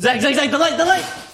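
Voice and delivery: very high, loud shrieking shouts. Calling out to zach, yelling into the mic. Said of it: "I'm sorry, if I yelled into the mic".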